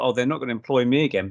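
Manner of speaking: ordinary talk, nothing marked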